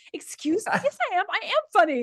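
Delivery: furious, very high-pitched, angry voice. Retelling an angry reply to a husband's joke: retelling getting really mad. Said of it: "I got really mad".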